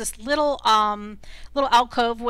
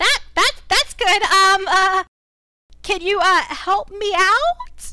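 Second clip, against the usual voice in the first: tiny, very high little voice calling out; 9 semitones higher, 5 dB louder than usual. Game master voicing someone calling up from a pit to the players: small little voice. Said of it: "you hear a little voice calling out".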